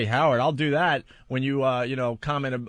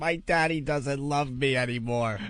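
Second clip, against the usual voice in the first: mock crying with fake sobbing. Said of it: "I'm crying".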